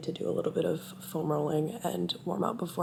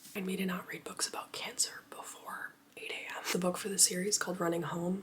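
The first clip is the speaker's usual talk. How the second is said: whispering, quieter; 7 dB quieter than usual. With their mom still asleep before a run, the speaker whispers. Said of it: "Sorry, I'm whispering".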